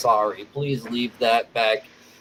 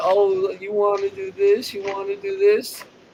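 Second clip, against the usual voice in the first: put-on repeated childish, nagging whine; 9 semitones higher than usual. Quoting someone thirty years old who is whining: imitating whining. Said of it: "you thirty whining, saying".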